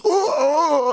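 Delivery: very high, startled yelping. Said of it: "He goes".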